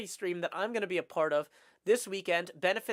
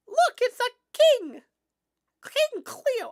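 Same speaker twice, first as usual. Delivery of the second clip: loud, squeaky, very high voice with botched squeak; 7 dB louder than usual. Announcing this week on Hermitcraft, attempting a voice you cannot do: failed Ollie voice. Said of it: "I cannot do an Ollie voice".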